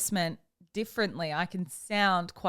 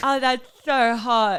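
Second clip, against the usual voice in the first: fake seductive lisping, higher and louder; 4 semitones higher, 7 dB louder than usual. Showing that sexy talk with a lisp fails: mock sexy talk with a lisp. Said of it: "you can't do sexy talk with a lisp".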